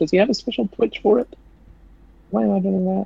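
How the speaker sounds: odd, sudden high-pitched squeak.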